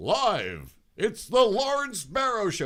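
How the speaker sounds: put-on very high, booming little-kid radio announcer voice. Retelling a childhood taped radio show: imitating own radio announcer voice. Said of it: "I was the announcer".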